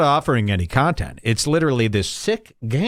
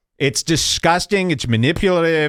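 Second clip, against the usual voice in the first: ordinary talk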